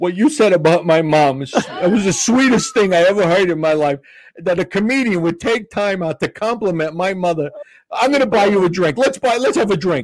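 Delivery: teary, deeply moved, heartfelt voice. Retelling a heckler's thanks, a tear in his eye: imitating a tearful man. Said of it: "he's got a tear in his eye".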